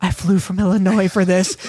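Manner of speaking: imitated whispering. Imagining someone in the ring with one over his head: mock whisper. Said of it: "He just whispers".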